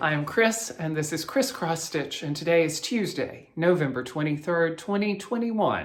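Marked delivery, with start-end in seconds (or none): 2.2-5.9 newscaster reading style. Host opening a Flosstube episode with the date, news anchor voice. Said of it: "I just sounded like a news anchor".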